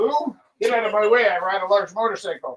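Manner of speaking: put-on commanding, authoritative voice. Teasing Galen by mimicking how he talks: imitating Galen's commanding voice. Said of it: "Your commanding voice is like".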